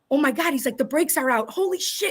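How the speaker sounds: mock panicked, freaking-out voice. Retelling a driver whose brakes went out, imitating him freaking out. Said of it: "And he was like freaking out".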